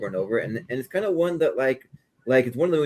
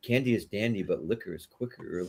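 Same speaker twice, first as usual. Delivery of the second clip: put-on whisper, quieter; 3 semitones lower, 7 dB quieter than usual. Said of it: "he's just whispering to, to children".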